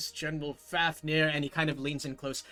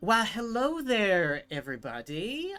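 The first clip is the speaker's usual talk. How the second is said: put-on high, swooping elderly upper-class woman voice; 5 semitones higher, 3 dB louder than usual. Voicing an elderly woman greeting the group: elderly noblewoman voice.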